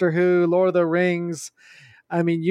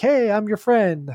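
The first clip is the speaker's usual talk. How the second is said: put-on, fake-friendly, chummy tone; 3 semitones higher than usual. Imitating a sleeper agent who shows up acting friendly: imitating Ajani acting friendly. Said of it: "acting all like".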